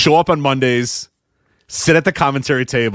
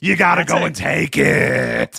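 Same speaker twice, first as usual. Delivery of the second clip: put-on wrestling commentator voice, higher; 4 semitones higher than usual. Retelling how the commentator answers a request for analysis: imitating Booker. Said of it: "He just goes".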